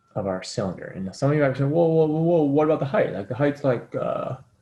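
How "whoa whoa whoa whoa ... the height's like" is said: mock know-it-all voice, higher and louder. Imitating students who object, in the voice of the guy saying the obvious. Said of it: "take that voice when I'm trying to be, like, the guy saying the obvious thing".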